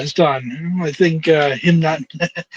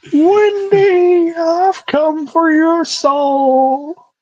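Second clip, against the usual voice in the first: soul very high, very slow, dragged and stretched out; 12 semitones higher, 3 dB louder than usual. Imagining a wrestler hearing the impression: Paul Bearer voice.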